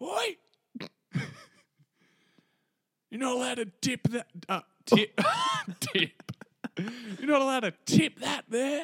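play-acted very high, swooping, shouted scream. Retelling how the tip guy came out at a dad dumping insulation: retelling a scream. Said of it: "The tip guy comes out and screams".

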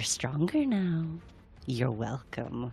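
hushed, soft half-whisper. Voicing Adelie holding a captive, speaking into his ear: half-whispering in character. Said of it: "Adelie's just going to whisper".

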